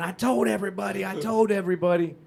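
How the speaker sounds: gloating, boastful cry. Retelling how a father jumped in front of the camera: imitating screaming. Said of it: "and starts screaming".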